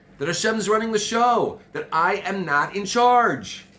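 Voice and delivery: high, loud, passionate yelling. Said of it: "You're yelling, you're yelling again".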